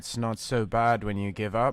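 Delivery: put-on British accent. Performing a line for viewers after asking forgiveness: British accent. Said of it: "I'm using like a British accent".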